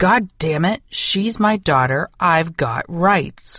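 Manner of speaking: seething, furious male voice. Reading a story aloud, voicing an angry man shouting from the front of the building, thundering. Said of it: "An angry man's voice thundered".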